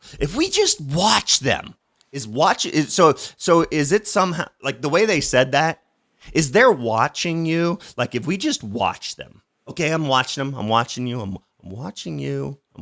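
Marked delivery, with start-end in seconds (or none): 9.9-12.8 derisive, sarcastic tone. Speaker mocking what others said, sarcastic. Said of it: "I'm being kind of sarcastic here".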